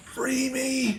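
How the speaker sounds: small echoey voice, very high and hushed. Voicing something calling out from a player's bag, in a little echoey voice. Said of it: "this little echoey voice".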